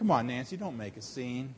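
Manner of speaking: very quiet, very low, hushed devil half-whisper. Acting out the devil talking someone out of faith: imitating the devil half-whispering. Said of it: "there is the devil whispering".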